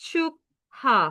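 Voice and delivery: 축하 drawn out and stretched very slowly.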